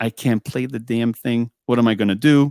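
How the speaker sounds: imitated bawling and sobbing. Retelling being one month into accordion lessons: retelling own bawling. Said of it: "I'm actually bawling".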